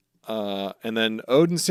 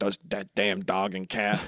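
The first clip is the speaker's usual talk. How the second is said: put-on angry captain voice, lower and quieter; 4 semitones lower, 6 dB quieter than usual. Retelling the captain's reaction to stowaways: imitating a pissed Whitebeard. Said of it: "And Whitebeard's pissed".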